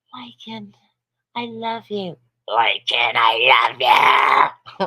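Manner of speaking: possessed, demonic-sounding voice. Speaker showing what a woman's voice really sounds like: Exorcist possessed voice. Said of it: "Like the fucking exorcist".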